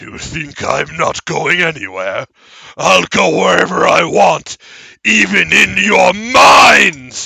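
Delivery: very loud, booming, creaky, slow half-orc voice. Voicing the half-orc speaking into the players' minds: half-orc voice in their minds. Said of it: "both of you hear this voice of presumably the half-orc".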